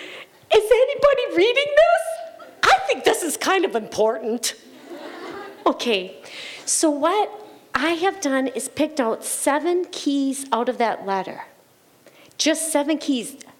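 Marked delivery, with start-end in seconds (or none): 0.0-4.5 tearful crying voice, pitched very high. Retelling reading a letter and asking if anyone read it: imitating own past crying. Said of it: "I'm reading this letter and I'm crying".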